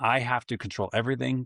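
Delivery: normal talking voice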